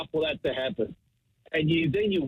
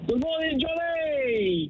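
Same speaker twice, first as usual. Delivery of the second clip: big loud voice, much higher pitch; 12 semitones higher than usual. [name], asked to greet John DeRemus, says it in a big, loud voice. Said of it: "in a big, loud voice".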